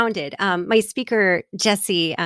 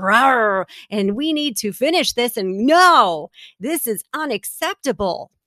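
mock, very slow, wrathful, angry delivery; 3 semitones higher than usual. Retelling Jesus in the temple, imitating Jesus roaring angrily. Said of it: "a roarous caucus of".

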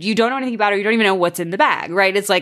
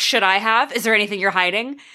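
acted confrontational, aggressive, accusing tone. Retelling an episode where a character confronts a woman: imitating an aggressive confrontation. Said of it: "where she's aggressive".

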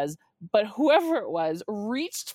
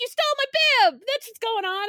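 play-acted, shrill yelling pitched very high; 14 semitones higher, 4 dB louder than usual. Retelling confronting a man who stole her race bib, imitating herself yelling. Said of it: "I yell at him".

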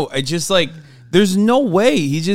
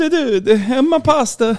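put-on Italian accent, pitched higher; 9 semitones higher than usual. Joking about an Italian version of xQc: Italian xQc impression. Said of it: "Italian X Q C".

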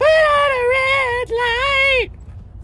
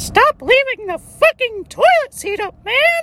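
small, squeaky cartoon mouse voice. Speaker imagines Mickey and Goofy as roommates; Mickey Mouse voice. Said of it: "my impression of Mickey and Goofy".

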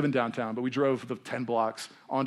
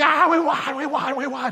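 mock screaming, going crazy, much higher pitch; 14 semitones higher, 7 dB louder than usual. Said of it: "he's just screaming and going crazy".

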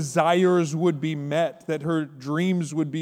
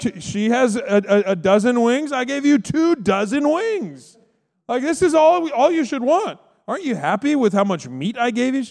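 pitched-up voice, stumbling over words; 7 semitones higher, 4 dB louder than usual. Retelling the Bible story, acting out the husband's words: imitating Elkanah. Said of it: "He's like".

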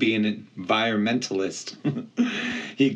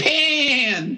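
very high, offended, indignant, drawn-out cry; 4 dB louder than usual. Correcting a human who misheard the name he said: crying out indignantly. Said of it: "he cried indignantly".

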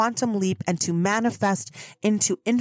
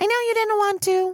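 very high, squeaky cartoon voice; 12 semitones higher than usual. Speaker imitates their guides yelling at them, in a Mickey Mouse–Marge Simpson cross voice. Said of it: "crossbreed of Mickey Mouse and Marge Simpson".

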